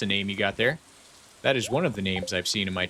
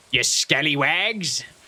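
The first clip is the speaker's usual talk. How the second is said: laid-on stock pirate voice, pitched up; 6 semitones higher, 4 dB louder than usual. Speaker demonstrates doing a good pirate, pirate voice. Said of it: "you can do a good pirate".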